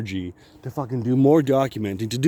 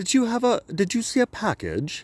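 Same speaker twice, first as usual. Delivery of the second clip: exaggerated, stupid, pitched-up put-on British accent; 9 semitones higher, 3 dB quieter than usual. Retelling the people at his door asking about a package, in a stupid British accent. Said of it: "they got a stupid British accent".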